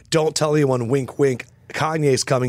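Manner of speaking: normal talking voice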